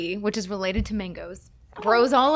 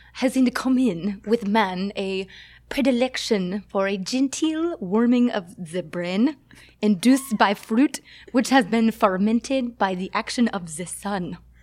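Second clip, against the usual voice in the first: bad, amateur put-on French accent. Speaker quotes a French naturalist: bad French accent. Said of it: "I can't do a French accent".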